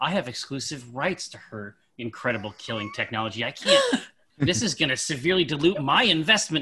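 muttered aside under the breath. A player in character, walking toward Morgaine, speaks: under the breath. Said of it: "under my breath".

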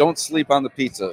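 ordinary talk

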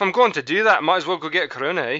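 mock, fake put-on Scottish accent. After botching an English accent, joking with others in a put-on Scottish accent. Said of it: "I'm just going to go with the Scottish".

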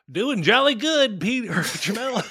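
very high, very loud, shrill put-on caricature voice.

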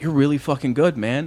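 ordinary delivery

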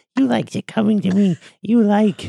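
very high, loud, shrill, weird gremlin creature voice. Acting out their own version of the line, weird gremlin voice. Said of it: "Mine's just a weird gremlin voice".

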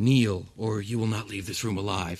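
hushed, whispered speech. Voicing a knight warning a kneeling player: whispering. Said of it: "he whispers to you".

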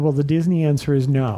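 ordinary talk, nothing marked

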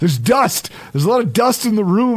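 shouting.

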